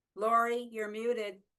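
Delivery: shouting. Calling out to a muted participant on a call, shouting. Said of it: "I don't know why I'm shouting".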